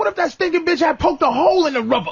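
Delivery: angry, indignant rant. Imitating another speaker complaining about a one-night stand: imitating someone pissed off. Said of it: "I can hear in his voice".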